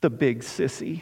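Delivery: put-on soft, small, trembling voice. The speaker retells a boy's words after a long silence: imitating a shaken little voice. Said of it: "his shaken little voice saying".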